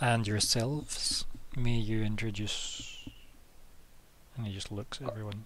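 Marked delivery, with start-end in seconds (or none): 0.0-3.1 very slow, solemn, formal delivery. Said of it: "kinda solemnly".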